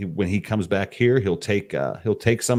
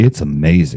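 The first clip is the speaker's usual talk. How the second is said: put-on hyped sales pitch voice, lower, louder; 4 semitones lower, 9 dB louder than usual. Pretending to be the marketing guy praising the product: put-on marketing voice. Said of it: "I'm gonna pretend to be the marketing guy".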